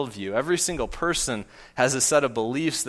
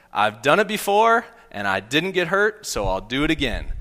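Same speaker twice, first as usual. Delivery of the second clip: put-on cute four-year-old voice, a bit loud; 2 semitones higher, 5 dB louder than usual. Retelling a 4-year-old's words from a tree fort, in [name]'s cute 4-year-old voice. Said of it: "in his cute 4-year-old voice".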